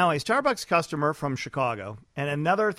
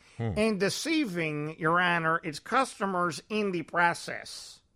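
put-on Chicago lawyer accent; 4 dB quieter than usual. Reading out a lawsuit's wording in a generic Cook County lawyer accent. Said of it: "in the generic Cook County lawyer accent".

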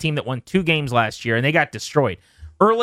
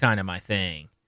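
imitated deadpan, lower, quieter, slower; 8 semitones lower, 7 dB quieter than usual. Retelling how he answered a question about his hoodie, mimicking a deadpan reply.

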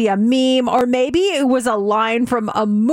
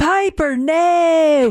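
put-on North Carolina Southern accent with a long drawn-out no; 3 semitones higher than usual. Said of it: "she has this accent that is so funny".

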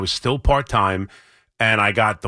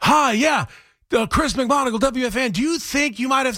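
mock shrill, very high, uncontrolled yelling. Speaker recalls calling someone at a loud arena, retelling a yell into the phone. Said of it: "and I was yelling at him".

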